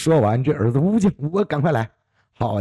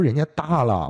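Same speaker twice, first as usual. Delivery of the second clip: usual speaking voice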